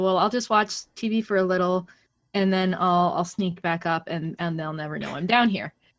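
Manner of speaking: ordinary delivery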